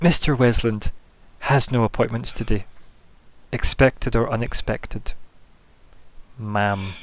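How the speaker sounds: slow, creepy, forced smiling politeness. Voicing a character during a tabletop game scene, creepy forced smile. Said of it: "with that really creepy forced smile".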